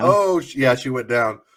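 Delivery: ordinary delivery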